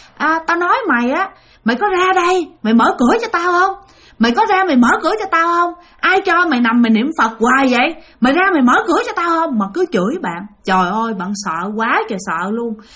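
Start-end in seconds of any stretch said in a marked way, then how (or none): 0.2-9.6 furious cursing ghost voice. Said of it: "Bà chửi rằng á là".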